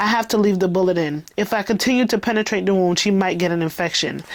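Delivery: plain reading voice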